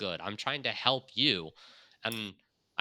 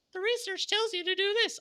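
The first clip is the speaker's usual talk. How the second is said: very high, squeaky cartoon voice. Acting out a junior analyst advising a site owner, in a Mickey Mouse voice. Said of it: "I'm just going to keep on using this Mickey Mouse voice".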